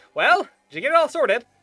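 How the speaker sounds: very loud, very high shout. Narrating as the group passes back through the midway: Mr. Biggs yelling out. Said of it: "does yell out at you".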